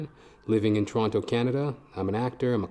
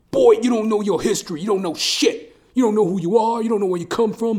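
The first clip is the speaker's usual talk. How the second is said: shrill, very high, loud in-your-face yelling tirade; 10 semitones higher, 7 dB louder than usual. Retelling what a truck driver yelled in his face: imitating a truck driver yelling. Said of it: "He starts, like, yelling at me".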